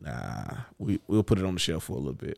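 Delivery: low, soft, dismissive brush-off tone.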